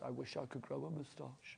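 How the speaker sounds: put-on very tragic voice. Telling Pauline what he just said, imitating a very tragic voice. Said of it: "in a very tragic voice".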